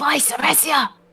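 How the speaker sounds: hushed, quiet whisper. Hiding under the corner of a table, a player's character calls out, whispering. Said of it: "and then whisper".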